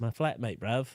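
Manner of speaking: put-on British accent. Retrying the uk phrase in a better accent: put-on british accent. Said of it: "That's more U K".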